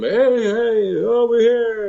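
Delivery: play-acted, very high, teasing, joking yell. Retelling calling back to a friend lost at night: retelling a yell. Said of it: "I start yelling back at him".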